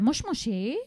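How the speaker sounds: moshi moshi with rising, question-like lift at end. Explaining the japanese greeting moshi moshi: rising inflection on moshi moshi. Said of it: "it's always said with an like an upward inflection".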